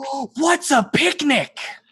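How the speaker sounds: put-on booming, very high, eager young dragon voice. Storyteller speaks as a young bronze dragon greeting a visitor: booming excited young dragon voice. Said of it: "booms the excited voice of a young bronze dragon".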